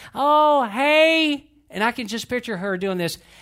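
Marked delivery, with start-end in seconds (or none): 0.2-1.5 very high, very loud, sociable, drawn-out "hey". Retelling a phone call, imitating grandmother's sociable phone tone. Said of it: "her tone changes when I call".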